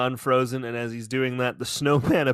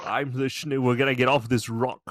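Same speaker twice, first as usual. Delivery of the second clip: badly done, put-on Scottish accent. Joking about a snowman cartoon: bad Sean Connery impression. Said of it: "all of the bad Scottish stays".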